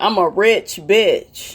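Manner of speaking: put-on brash reality-star voice. Showing how Nene really talks: imitating Nene. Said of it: "When you hear Nene, you go say shit like".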